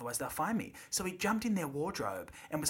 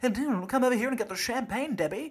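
1920s party-goer voice, higher and louder; 9 semitones higher, 5 dB louder than usual. Joking about how the voice sounds: nineteen twenties swinger voice. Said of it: "It's kind of a bit nineteen twenties swinger".

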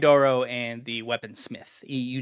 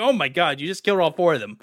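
mock panicked, freaked-out voice, higher pitch; 4 semitones higher, 4 dB louder than usual. Retelling a game character's reaction when confronted: imitating someone freaking out. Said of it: "he was, like, freaking out".

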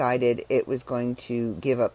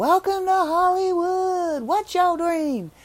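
slow, very high, drawn-out yell. Quoting a homeless man from an often-quoted movie, imitating a homeless man yelling. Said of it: "he's yelling out".

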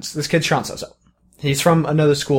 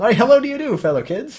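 corny, square put-on voice, pitched up; 9 semitones higher than usual.

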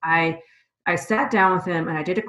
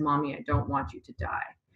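mock child crying, quieter; 3 semitones lower, 6 dB quieter than usual. Retelling what her son said while holding his stuffy, imitating her son crying. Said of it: "he's crying and he says".

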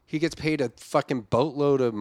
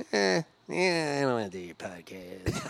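slow, drawled, unbothered put-on celebrity voice; 5 dB quieter than usual. Doing an impression of Drew Carey turning down a podcast: Drew Carey impression. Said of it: "do Drew Carey".

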